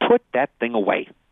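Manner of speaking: loud, scornful, disdainful tone. Retelling the moment Peter draws his rusty sword, quoting the reply: mock-disdainful. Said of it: "you can almost hear the disdain in his voice".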